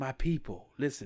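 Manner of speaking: put-on breathy voice. Telling friends about a man's speech, breathy voice impression. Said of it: "he like has a very breathy voice".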